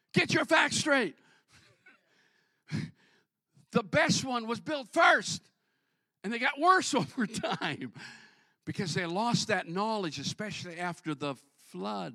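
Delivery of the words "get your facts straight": high-pitched, loud yelling. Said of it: "I was yelling at the T V".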